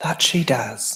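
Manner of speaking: put-on British accent. Agreeing with praise of a woman just mentioned, in a put-on British accent. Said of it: "that's my British accent".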